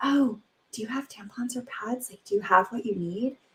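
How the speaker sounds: acted-out whisper. Retelling how she whispered to her daughter in the hallway, retelling a whisper. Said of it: "I whispered to her in the hallway".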